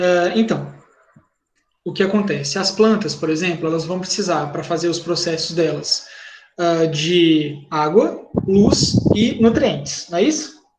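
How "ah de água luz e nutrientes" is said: very slow, drawn-out, each word slowed down. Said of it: "eu vou falar mais devagarzinho".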